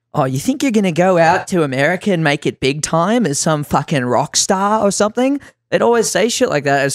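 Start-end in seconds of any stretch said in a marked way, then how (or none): 0.1-5.4 mocking, put-on female Australian accent. Musician recalls friends in Australia mocking the move to America, in a put-on Australian female hater voice. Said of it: "I put on the Australian female fucking hater voice".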